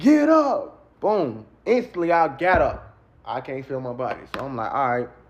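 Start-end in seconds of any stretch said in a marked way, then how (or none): 0.0-0.8 thunderous, booming, very high shout. Speaker retelling a voice ordering him to get up, imitating a booming shout. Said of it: "it's like the loudest voice I ever heard".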